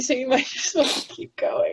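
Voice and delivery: tearful, crying while speaking. Moved during the conversation, the speaker tells the others to keep going: crying while talking. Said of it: "I'm legit still crying".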